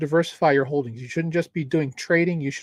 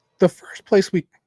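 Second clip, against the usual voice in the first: voice breaking and cracking mid-sentence; 3 semitones higher, 5 dB louder than usual. Presenting on a shared screen to viewers, voice cracking. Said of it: "my voice is cracking".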